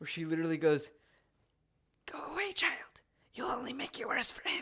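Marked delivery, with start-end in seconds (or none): 2.1-4.6 bad, terrible put-on old lady voice. Quoting an old lady from the book: terrible old lady voice. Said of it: "that was a terrible old lady voice".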